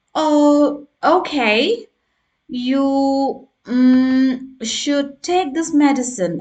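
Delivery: slow, halting, hesitant, filler-heavy, "mm" drawn out. Showing a learner an example of bad fluency: hesitant speech full of fillers. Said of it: "examples of bad fluency".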